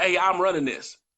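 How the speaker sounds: normal talking voice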